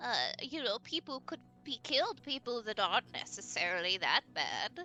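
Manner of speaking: put-on old granny character voice. Voicing the grandmother who greets the players: grandmother voice. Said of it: "pinches your cheek".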